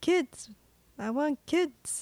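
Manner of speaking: theatrical, over-dramatic delivery. Recapping a movie scene with a co-host: Nicolas Cage dramatic reading. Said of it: "Nicolas Cage with my dramatic reading".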